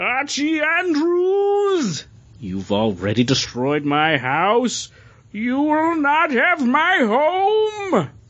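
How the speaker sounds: very high, slow, dramatic, with "home" stretched out. Dramatic reading of a panel from an Archie comic, Skeletor voice. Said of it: "I'm going to doomfist it".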